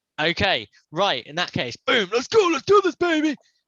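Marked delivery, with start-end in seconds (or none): 1.9-3.4 very high, swooping, obnoxious sportscaster hype. Kicking off the podcast's game bracket, in a super obnoxious sports commentator voice. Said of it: "that's my super obnoxious, sporty, uh, sport commentator voice".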